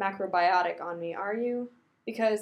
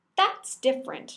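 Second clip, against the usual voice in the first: curt, sharp, snapped retort; 4 semitones higher than usual. Rodney snaps back in an argument about superheroes' secret identities. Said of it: "Rodney snaps".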